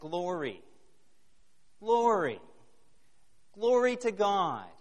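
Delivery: rising cry.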